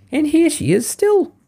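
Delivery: very high, gleeful, joyful little squeak. The baby bear finds Goldilocks in its bed, squeaking joyfully. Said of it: "squeaked the baby bear joyfully".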